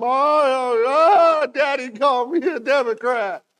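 put-on very high, loud, wailing, sobbing little girl's cry. Retelling a meme of a little girl, imitating her crying. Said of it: "She's just crying".

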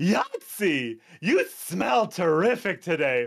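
slow, high, swooping, drawn-out sing-song character voice. Answering a viewer's request to say something nice: Toasty's voice. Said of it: "please say something nice in Toasty's voice".

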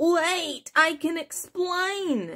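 put-on rat voice, high and slow. Reading a story, voice a caught rat speaking to the narrator in a talking rat voice.

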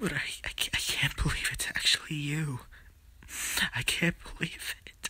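crying while talking. Acting a reunion with someone missed for fifty-one years, crying while talking. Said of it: "why are you crying?".

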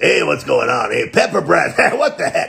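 gruff, rough, creaky bandit thug voice. A voice actor tries one of his character voices on another character. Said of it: "What if the Fire Emblem voice was in Agumon?".

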